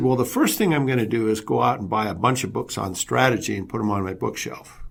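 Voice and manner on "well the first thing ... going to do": ordinary delivery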